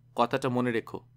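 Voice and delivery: ordinary talk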